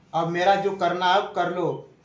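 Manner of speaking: ordinary delivery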